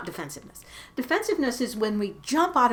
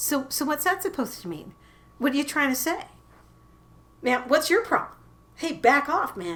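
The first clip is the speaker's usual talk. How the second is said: prickly, on-guard, defensive tone, pitched up; 5 semitones higher than usual. A speaker demonstrates how defensiveness sounds, defensive tone. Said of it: "you hear that tone in my voice".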